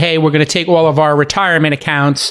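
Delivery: ordinary delivery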